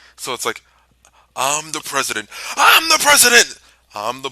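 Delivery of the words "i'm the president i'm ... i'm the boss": very loud wrestling-promo scream with wild pitch swings. Retelling a wrestling promo line, Ric Flair promo impression. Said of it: "the promo where Flair's talking about being the president".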